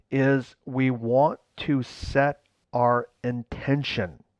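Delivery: very slow, deliberate, every word laid down separately. Speaker stating one simple sentence about setting intention, very slow. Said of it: "I'm going to say this very slowly".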